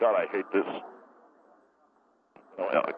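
soft, low, frustrated aside under the breath.

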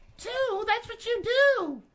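high, slow mocking imitation. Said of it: "two can play at that game".

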